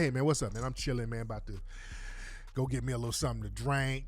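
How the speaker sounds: relaxed, laid-back, casual everyday voice. Showing how someone talks among friends after work: relaxed casual voice. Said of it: "your regular, relaxed voice".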